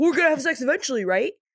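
put-on high, whiny little baby-talk cadence. Recapping Henry's reply to Jen, mocking Henry's whiny baby talk. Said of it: "the cadence of his like little whiny baby talk".

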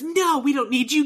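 put-on shout. Retelling a film scene where the mother-in-law turns away a helper: imitating someone shouting. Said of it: "she shouts at this guy".

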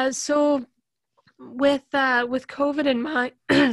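voice cracking. Interviewer starting a question to a guest about their program, voice cracking. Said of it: "sorry, a little voice crack".

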